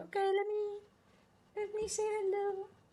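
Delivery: very high-pitched pet-talk voice. Voicing the dog who finally shows up on stream: voicing Gigi the dog. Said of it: "and now she's like".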